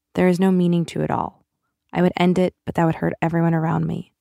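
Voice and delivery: ordinary talk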